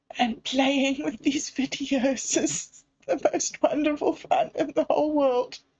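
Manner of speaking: crying while talking. Talking to viewers about needing to have fun, crying while talking. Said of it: "excuse me while I just pull myself together".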